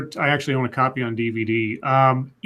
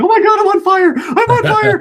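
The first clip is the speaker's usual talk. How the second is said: very high, loud panicked cries broken by laughter; 8 dB louder than usual. Telling a story about a guy whose pants caught fire, acting out his laughing. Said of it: "he starts laughing as he's like".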